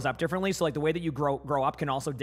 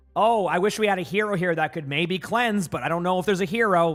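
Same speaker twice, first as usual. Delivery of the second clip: loud, passive-aggressive, hinting tone; 4 semitones higher, 5 dB louder than usual. Giving an example of how a gamer talks to teammates: passive-aggressive. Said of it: "That's passive-aggressive".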